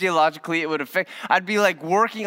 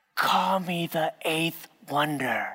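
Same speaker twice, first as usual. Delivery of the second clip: soft, teasing half-whisper, very close; 5 dB quieter than usual. Retelling how Monica crept up after winning: imitating a half-whisper. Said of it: "She'd come up and whisper into my ear".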